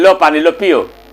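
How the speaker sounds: curt, grudging, level-pitched, tossed-off delivery. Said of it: "दूसरा बार में मांगा तो एक ही हाथ से".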